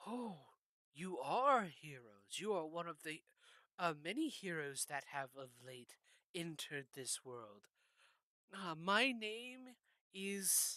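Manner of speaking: strange, floating jellyfish creature voice. Game narrator voices a creature the heroes meet in a dungeon, jellyfish creature voice. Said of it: "you come into a chamber kind of out of the way and see what could really be described as a floating jellyfish, only it's not. The tendrils beneath it kind of curl and move on their own, It floats, and".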